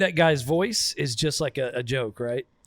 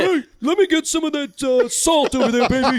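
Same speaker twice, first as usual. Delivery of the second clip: put-on excited sportscaster voice, higher and louder; 11 semitones higher, 5 dB louder than usual. Imitating the broadcaster asking for salt: Dick Vitale impression. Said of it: "that's how he sounds".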